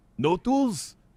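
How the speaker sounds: over-the-top, thick, high-pitched put-on Russian accent. Retelling what a mover asked about the toolbox: Russian accent. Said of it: "super duper Russian".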